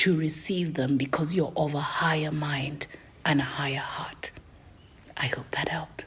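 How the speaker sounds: weird whisper with no voice at all. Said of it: "why does she do the weird whispery voice".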